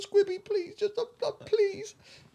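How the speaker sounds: very high, tearful, crying, pleading voice. Retelling how a crying woman begged: imitating someone crying and pleading. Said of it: "she's crying".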